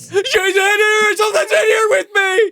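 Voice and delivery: loud high scream. Describing a horror film scene to another speaker, doing Bruce Campbell's top-of-lungs scream. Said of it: "just screams at the top of his lungs".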